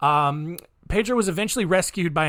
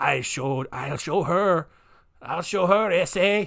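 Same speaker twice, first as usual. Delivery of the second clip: bad put-on Colombian accent, slow and drawn out. Retelling what a killer said after running away: bad accent imitating Pedro. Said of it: "such a bad accent".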